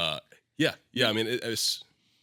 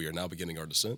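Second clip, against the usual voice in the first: mock-calm pilot announcer voice, lower, quieter; 2 semitones lower, 3 dB quieter than usual. Imagining Seth speaking over the plane's mic, the speaker is imitating Seth's calm pilot voice. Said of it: "You do have a calming voice".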